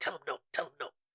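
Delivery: high, hushed half-whisper, repeated twice. Retelling an earlier aside to the other speaker: imitating own half-whisper. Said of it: "did you hear me whisper to you?".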